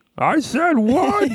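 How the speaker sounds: very high cartoon character voice, pushed way up. Retelling a joke scene from a show: Barney impression. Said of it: "That's a good Barney impression too".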